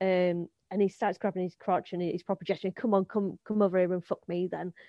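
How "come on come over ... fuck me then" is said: ordinary delivery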